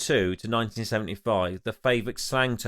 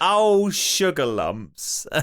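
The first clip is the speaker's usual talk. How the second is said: put-on posh voice, high and raised exclamation; 6 semitones higher, 5 dB louder than usual. Retelling what a student said: imitating a posh student. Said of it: "she sounds a little bit, um, posh".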